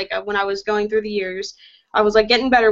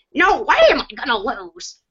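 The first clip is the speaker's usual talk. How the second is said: animated cartoonish voice, pitch swooping up and down; 3 semitones higher than usual. Speaker doubting they can do Jet, trying their best Jet impression. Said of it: "my best impression of Jet would probably be like".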